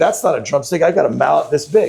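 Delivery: ordinary talk, nothing marked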